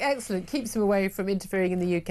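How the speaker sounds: ordinary talk, nothing marked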